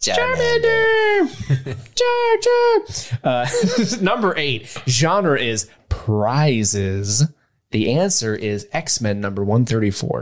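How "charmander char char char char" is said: squeaky high voice with bouncing pitch. Asked on the show to do the Charmander voice again, Charmander voice. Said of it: "do the Charmander voice".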